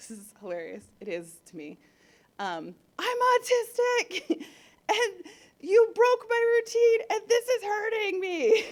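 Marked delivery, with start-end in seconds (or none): 3.0-8.6 very high, very loud, shrill, overloaded yelling. Retelling her child's meltdown at the doctor: imitating her child yelling. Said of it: "And then she started yelling".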